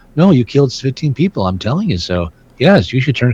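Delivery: hypnotic, eerie, mesmeric, low, creepy delivery. Imitating how a naturally creepy character talks, in a mesmeric soft-spoken voice. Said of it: "He's got that mesmeric voice".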